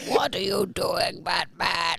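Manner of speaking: put-on rough, creaky, raspy masked villain voice. Imitating a villain after being told they look like Bane: Bane voice. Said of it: "Indian Bane?".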